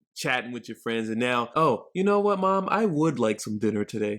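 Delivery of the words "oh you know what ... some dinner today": formal, proper, well-mannered polite register. Explaining code switching, showing how you talk once your parents walk in: proper polite voice. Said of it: "What you just heard me do was a version of code switching".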